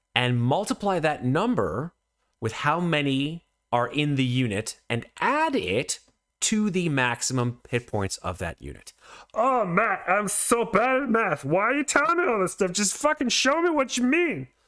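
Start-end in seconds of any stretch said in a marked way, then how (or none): 9.4-14.5 very high-pitched cartoonish voice, pushed way up. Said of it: "I just sounded like Barney from The Simpsons".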